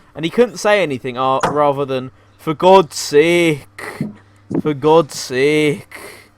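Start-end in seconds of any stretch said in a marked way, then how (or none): 2.4-6.0 put-on very slow, poor northern English accent. Imitating the person voicing a crossover video, bad northern English accent. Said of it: "had a northern accent worse than".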